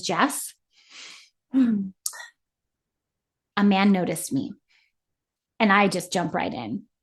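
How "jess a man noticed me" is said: mock grave, heavy, somber, serious delivery. Retelling what she said after weighing in: imitating her somber tone. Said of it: "She gets really somber and says".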